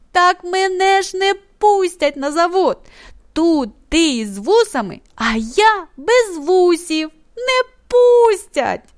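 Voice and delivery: joyful, happily exclaimed. Narrator reads Taras exclaiming to his dad about the factory pass; exclaiming joyfully. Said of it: "радісно вигукнув".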